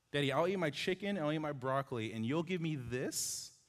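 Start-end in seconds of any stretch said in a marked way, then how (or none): 2.2-3.5 statement-like line with questioning rise on this. Quoting how he asks Daddy for something: rising at the end on this. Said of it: "little inflection at the end, question mark".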